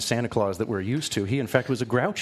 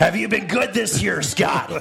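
very gruff, loud, rough-edged growl; 8 semitones higher, 5 dB louder than usual. Asked on the radio to hear his persona, speaker addresses Scott, gruff Belsnickel voice. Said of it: "let me hear that voice".

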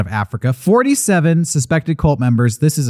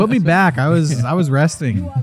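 normal talking voice

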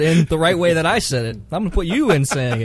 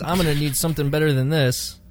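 usual speaking voice

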